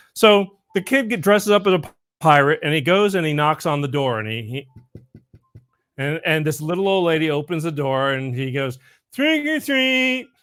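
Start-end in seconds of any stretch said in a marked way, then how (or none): 9.1-10.2 very high voice with a speech impediment. Telling a joke about a kid dressed as a pirate at the door, in hair-lip speech. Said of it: "he kind of talks like this because he got a hair lip".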